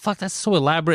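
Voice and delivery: normal talking voice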